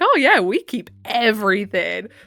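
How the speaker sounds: acted, amused, chuckling, drawn out, laughing while talking. Retelling what a woman said while she laughed: imitating a woman laughing while talking. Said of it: "And the woman was just, like, laughing".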